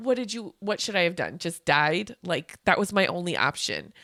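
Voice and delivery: ordinary talk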